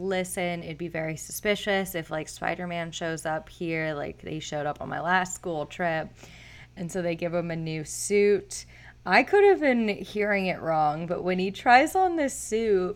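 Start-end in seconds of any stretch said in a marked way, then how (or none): none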